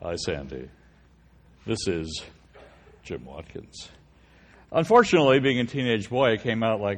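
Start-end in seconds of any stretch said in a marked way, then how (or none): 0.0-3.9 whispered, hushed, breathy, mellow radio announcer voice. Speaker retelling his planned phone opener to a cheerleader, mellow radio announcer voice. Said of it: "delivered in this mellow radio announcer voice like".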